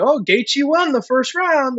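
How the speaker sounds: slow sarcastic tone. Retelling a text sent during the fight: retelling own sarcastic remark. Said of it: "I kinda said it sarcastically".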